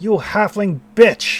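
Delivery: very loud, rough, gruff guttural yell. Game master voicing a call-out the players hear, in a gruff, guttural voice. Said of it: "this very gruff, guttural voice is like".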